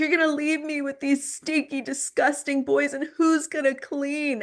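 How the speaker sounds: put-on high, tearful, sobbing wail. Retelling a parent's tearful plea when leaving home: imitating mom sobbing. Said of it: "she's just sobbing".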